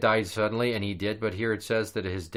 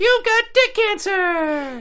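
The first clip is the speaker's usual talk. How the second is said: very high, squeaky helium-like squeal; 8 dB louder than usual. Joking about a doctor giving bad news after breathing helium: high-pitched helium voice. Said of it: "breathes into a helium balloon".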